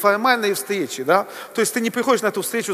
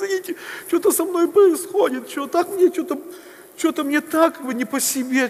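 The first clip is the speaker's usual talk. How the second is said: mock, tearful, pitched-up speech pushed through tears; 7 semitones higher than usual. Retelling what a woman said to him when she began to cry, imitating someone crying. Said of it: "Просто начинает плакать".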